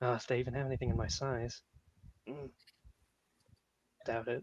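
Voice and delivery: muttered half-whisper, very quiet and low. Lagging behind the group as they head off, the character is half-whispering under his breath. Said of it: "just like whispering under his breath".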